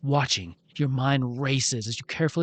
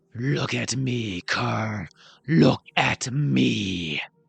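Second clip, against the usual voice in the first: very slow, rough growl barely shaped into words. Narrator reading a voice calling to kerr from a lit room, growl shaped into words. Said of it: "little more than a growl shaped into words".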